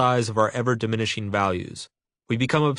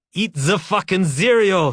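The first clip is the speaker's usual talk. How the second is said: yelled shrill scream in a really bad Bavarian accent; 7 semitones higher, 5 dB louder than usual. Voicing an imagined guy in an SS uniform holding a gun, screaming in a bad Bavarian accent. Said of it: "in a really bad Bavarian accent".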